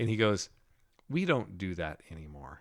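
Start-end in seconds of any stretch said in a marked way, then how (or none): 1.1-2.6 put-on sneering, condescending tone with swooping pitch. Retelling a dream where a pastor spoke with a sneer: imitating a sneering pastor. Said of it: "sneer, almost like it was, like, it, not a good look on his face".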